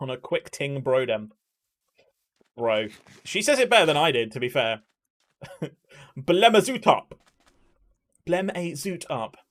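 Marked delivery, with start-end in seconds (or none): 6.2-9.3 put-on posh accent, pitched up. Repeating roadman slang, the speaker says it as roadman slang in posh accent. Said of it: "Roadman in posh accent is just perfection".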